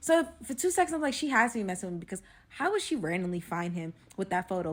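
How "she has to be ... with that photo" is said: ordinary talk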